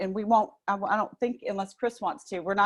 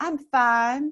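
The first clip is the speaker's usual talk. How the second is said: lightly laid-on, put-on Southern accent; 4 semitones higher, 4 dB louder than usual. Explaining a saying from the South, repeating it in a put-on Southern accent. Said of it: "I'm going to put my little Southern accent on it".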